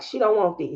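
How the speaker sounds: plain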